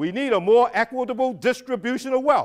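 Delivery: very loud, very high pitched, declaiming voice. Reading the next line into his microphone: saying it real loud. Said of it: "I'm going to say the next line real loud".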